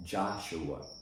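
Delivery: stress on first syllable of Joshua. Pointing out a strong syllable in a Bible reading, stress on first syllable of Joshua. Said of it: "the first syllable in the word Joshua is strong".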